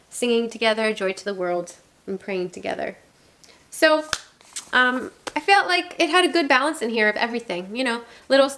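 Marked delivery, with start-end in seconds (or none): none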